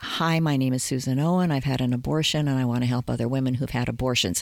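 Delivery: rushed, fast, all in one breath.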